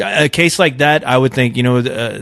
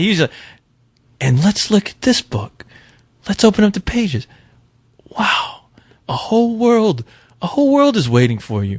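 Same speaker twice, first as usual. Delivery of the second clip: put-on smoother, calmer voice, much higher; 9 semitones higher than usual. Correcting another speaker's impression, showing how the original sounded: smoother, calmer impression. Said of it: "a lot more smoother and calmer than that".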